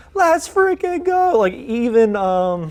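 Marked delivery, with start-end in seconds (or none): 0.2-1.4 put-on scream, higher and louder. Retelling cheering at a tying goal in the weather office: retelling own screaming. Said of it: "I start screaming in the weather office".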